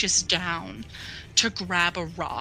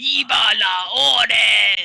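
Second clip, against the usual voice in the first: very loud monster bellow, la drawn out; 3 semitones higher, 9 dB louder than usual. Voicing a tree creature in combat: tree monster shouting. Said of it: "As it shouts".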